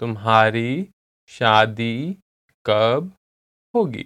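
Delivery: slow, careful, deliberate word-by-word repetition. The speaker repeats a translated phrase for listeners, said again slowly. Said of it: "I'll say it again slowly".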